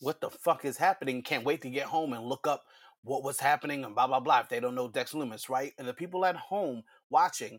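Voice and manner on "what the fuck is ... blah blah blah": ordinary talk, nothing marked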